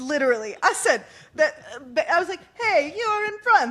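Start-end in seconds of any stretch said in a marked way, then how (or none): 2.6-3.7 put-on energetic, high voice with very strong Italian accent. Retelling the engineer's radio message: imitating an italian race engineer. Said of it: "the very Italian race engineer".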